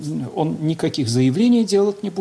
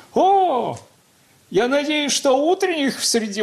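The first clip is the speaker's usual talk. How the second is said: bright, merry, cheerful, high, welcoming tone; 9 semitones higher than usual. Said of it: "вот таким веселым, высоким голосом говорит".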